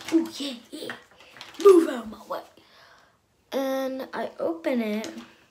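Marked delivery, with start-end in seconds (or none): 0.1-2.4 mock very loud, rushed, pumped-up eager excitement. Retelling her own reaction on going up to a present, acting out own excitement. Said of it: "And I'm like all excited".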